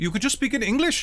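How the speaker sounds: put-on heavy British Indian accent, high. A narrator voices a woman replying to the listener, thick british indian accent. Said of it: "in her thick British Indian accent".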